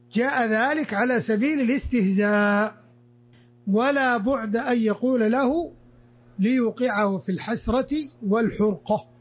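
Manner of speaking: normal talking voice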